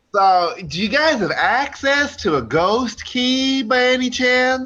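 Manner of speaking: put-on Southern US accent. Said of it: "I'm not trying to make fun of your accents".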